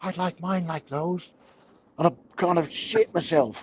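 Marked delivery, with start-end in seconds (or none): 0.0-1.3 little voice, small, soft and close. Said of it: "this little voice pops over my shoulder".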